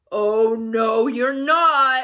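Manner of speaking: fierce, loud roaring troll voice. Reading a billy goat story aloud, narrator gives the troll's reply in a roaring troll voice. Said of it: "roared the troll".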